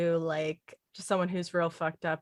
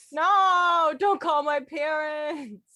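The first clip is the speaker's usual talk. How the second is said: mock pleading, higher and louder; 11 semitones higher, 6 dB louder than usual. Playing a student after the other speaker says this is a class: pretend student pleading with teacher. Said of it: "This is a class".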